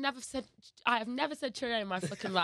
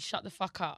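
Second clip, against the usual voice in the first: exaggerated cartoonish London accent; 3 semitones lower than usual. Speaker from Leicester shows a listener how a Londoner would say it, in a London accent. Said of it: "That's London".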